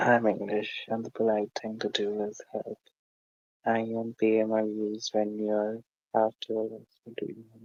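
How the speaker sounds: soft, swallowed, barely audible mumbling. Taking charge of speaking when nobody else is talking, mumbling. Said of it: "You're mumbling. I barely hear you".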